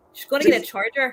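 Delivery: Irish-accented voice. Joking with friends, the speaker repeats a woman's line to show off an irish accent. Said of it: "You're actually better than that".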